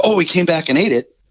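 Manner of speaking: high, startled exclamation. Mimicking an angler winding the line back, mocking surprised angler. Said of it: "the line gets tight and goes".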